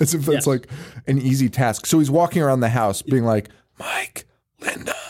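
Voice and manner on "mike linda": hushed, calling whisper. Recounting a scene, the speaker acts out a character calling two names, retelling a whisper. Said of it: "Why are you whispering?".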